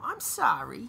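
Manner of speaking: put-on New York accent. Showing how Harley Quinn should sound: Harley Quinn New York accent. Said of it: "we need that, that, that New York accent".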